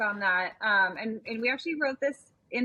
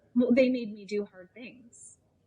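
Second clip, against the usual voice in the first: mock-deadpan, acted flat delivery. Telling a story about parenting, retelling a woman's deadpan reply. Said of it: "she looked at me deadpan and she said".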